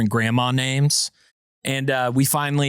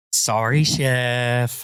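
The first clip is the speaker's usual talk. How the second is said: the word "chef" drawn out. Retelling how a fellow game watcher apologized after being told to quiet down: imitating Miss Amy. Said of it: "Exactly like that".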